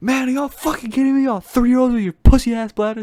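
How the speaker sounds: put-on yelling in a Ugandan accent. Retelling how a man yelled when half the people went to the bathroom: retelling a yell, Ugandan accent. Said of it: "he just started yelling".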